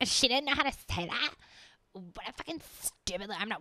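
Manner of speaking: put-on snobbish voice. Acting out an imagined elitist viewer: mocking an elitist viewer. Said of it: "Don't be a motherfucking elitist being like".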